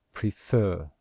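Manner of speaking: stress on second syllable of "prefer". Showing the stress symbol for a word: stress on second syllable of prefer. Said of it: "can you hear that we stress the second syllable?".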